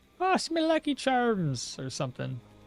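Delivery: put-on stage-Irish brogue. Greeting a game character in a joking way: put-on Irish accent. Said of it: "trying to sound like a Irishman".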